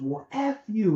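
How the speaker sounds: high, angry outburst. Retelling a phone call where the other man loses it, imitating an angry outburst. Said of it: "And he loses it".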